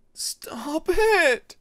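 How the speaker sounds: shrill frightened sobbing, very high and loud. Narrator reads a confused, frightened character's line, sobbing. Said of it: "Peacemaker sobbed, confused and frightened".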